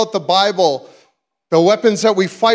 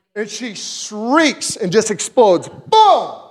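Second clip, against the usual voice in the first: plain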